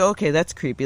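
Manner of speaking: ordinary talk, nothing marked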